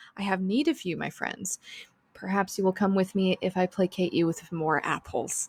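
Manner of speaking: very calming, gentle, soothing voice. A player voicing her character trying to coax the horses: very calming voice. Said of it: "she would say in a very calming voice".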